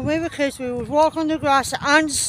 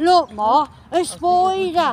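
put-on British accent; 3 semitones higher than usual. Quoting a line from a video, imitating a British accent. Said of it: "tries to do the British accent for that".

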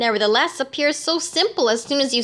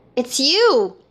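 feverish, fevered outcry; 3 dB louder than usual. Narrator reads Raoul recognizing the man in the astrakhan cap: feverish cry. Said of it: "he cried in a feverish voice".

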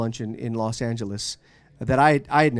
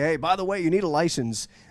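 hollered in a higher pitch. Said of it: "hollered at you right when you were leaving".

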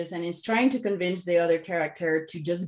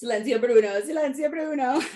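put-on Italian accent, higher pitch; 7 semitones higher than usual. Speaker showing the phrase used to silence self-talk, in an Italian accent. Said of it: "I even do it with the Italian accent".

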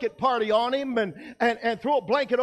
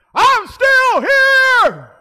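shrill, full-throated, very loud, high, stretched shout; 13 semitones higher, 12 dB louder than usual. Retelling a platoon member shouting from the back of the formation, retelling a loud shout. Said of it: "as loud as I've ever heard anybody shout".

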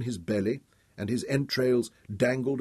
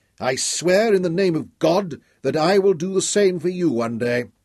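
high-pitched shout, voice choking with emotion; 7 semitones higher, 6 dB louder than usual. Narrator reads Dorian's line as he shouts back, choked up, shouting. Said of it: "His voice choked as he shouted back".

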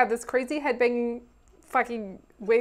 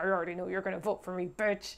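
very quiet, hushed mutter through clenched teeth; 5 semitones lower, 11 dB quieter than usual. Retelling how one person tried to convince another, mock speaking through gritted teeth. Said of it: "like through gritted teeth".

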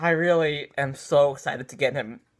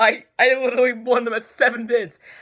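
elated, overjoyed, disbelieving, voice pitched up; 7 semitones higher, 3 dB louder than usual. Bidder recording an intro right after winning an auction, so happy. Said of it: "I'm so happy right now".

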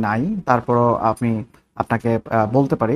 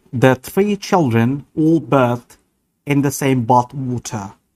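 put-on British English accent. Demonstrating one sentence in different accents, imitated British accent. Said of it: "ব্রিটিশ অ্যাকসেন্ট।".

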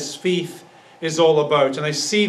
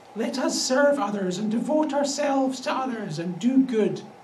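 soft, limp, pitched-up pious sermon voice; 6 semitones higher, 5 dB quieter than usual. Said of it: "that's how it's often said".

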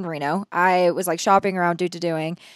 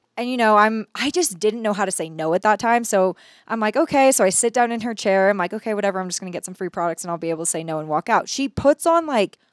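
ordinary delivery

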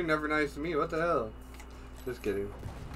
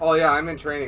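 plain

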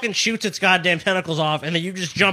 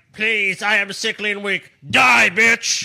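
flat, slow, even monotone drone; 3 semitones higher than usual. Teasing another speaker about the final blow, quoting a movie villain: imitating Megatron. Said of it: "Megatron's all like".

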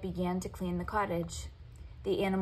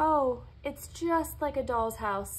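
loud exclaiming, pitched up, fairy-tale storybook style; 6 semitones higher, 4 dB louder than usual. The heroine follows birds and finds a tiny cottage, exclaiming.

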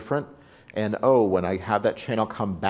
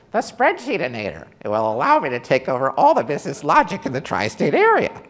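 loud, booming character voice swooping up high; 6 semitones higher, 5 dB louder than usual. Presenter introducing a spreadsheet tool to the audience, in a Heinz Doofenshmirtz voice. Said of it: "using the Heinz Durfenschmertz voice".

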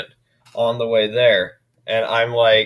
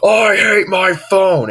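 put-on, high, drawn-out shouted outburst; 9 semitones higher, 4 dB louder than usual. Retelling how a friend acted upset with his phone: imitating someone yelling. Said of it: "and he yelled".

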